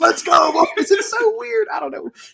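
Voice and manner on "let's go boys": insanely angry, intense voice, pitched up. Showing how the speaker talks once the skates go on; super angry voice. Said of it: "I just start talking like this".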